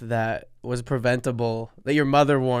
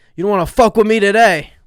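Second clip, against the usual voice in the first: put-on angry yell, higher and louder; 8 semitones higher, 11 dB louder than usual. Asked to imitate a friend angry in the car: Sebastian impression yelling. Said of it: "Give me a little Sebastian".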